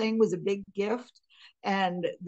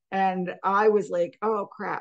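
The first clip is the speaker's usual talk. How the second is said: ordinary talk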